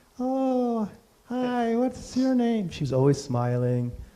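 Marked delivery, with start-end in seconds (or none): 0.2-2.7 very high-pitched, very slow, drawn-out voice. Retelling how a woman who served tea greeted visitors, imitating a really high-pitched voice. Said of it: "she had this really high pitched".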